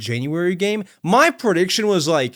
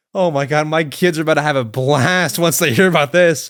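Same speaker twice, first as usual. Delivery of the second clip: plain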